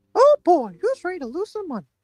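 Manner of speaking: squeaky cartoon mouse impression. Speaker about to lose money gambling greets listeners in a Mickey Mouse voice. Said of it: "that's a really good like Mickey Mouse voice".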